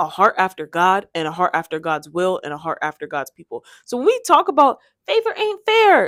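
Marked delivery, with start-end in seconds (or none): 5.1-6.1 very high, silly, goofy cartoonish put-on voice. Speaker says a phrase they used to hear in a goofy voice. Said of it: "I say it in this goofy voice".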